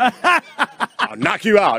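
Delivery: put-on tough-guy Detroit accent. Jumping into someone's story with a threat: put-on Detroit tough-guy voice. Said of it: "Detroit tough guy voice".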